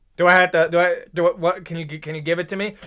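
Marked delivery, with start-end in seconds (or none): none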